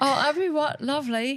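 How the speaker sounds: put-on British accent. A podcast host jokingly talks to a co-host in a put-on British accent. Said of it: "the whole podcast in a British accent".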